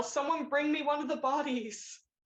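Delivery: high, acted, in-character yell. Voicing a character who demands one of the bodies: yelling in character. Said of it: "He's gonna yell".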